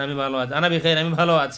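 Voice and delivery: ordinary delivery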